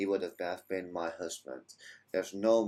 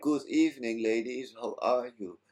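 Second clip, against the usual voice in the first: put-on drunk, boozy, loud yelling; 4 semitones higher, 3 dB louder than usual. Retelling how a drunk friend greeted two girls: imitating Geon screaming. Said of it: "he was screaming in their ear".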